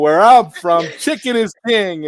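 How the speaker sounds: loud, high-pitched commercial announcer voice. Mocking an announcement as a chicken advertisement: imitating Colonel Sanders. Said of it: "he sounded like Colonel Sanders".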